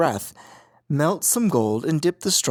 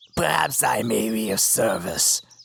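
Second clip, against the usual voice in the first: scratchy, creaking, rough gnome voice; 4 semitones lower than usual. Reading a fairy tale aloud, a gnome offers to help, in a creaky voice. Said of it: "said a creaky voice".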